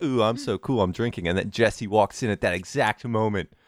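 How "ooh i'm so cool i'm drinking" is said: smug, mocking, put-on cool voice. Retelling how a girl at a dance mocked the kids drinking: retelling a mocking imitation. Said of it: "I was making fun of them".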